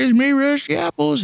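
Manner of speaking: very high-pitched put-on character voice. Describing the imposter version of Rusty Apples: high-pitched Rusty Apples voice. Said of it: "Not the high-pitched voice of Rusty Apples either. Not the guy that's just like".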